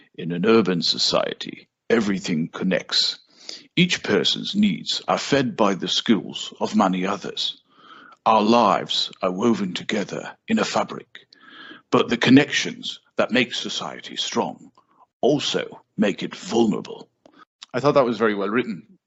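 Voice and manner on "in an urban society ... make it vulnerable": smooth, suave, put-on British narrator accent. Speaker quotes a movie's opening narrator in a suave British accent. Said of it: "I'll try and do the the suave British accent".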